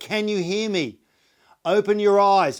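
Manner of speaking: very loud, high, up-close call. Demonstrating how to get a response from a person, close to their face: loud voice. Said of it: "to their face in a loud voice".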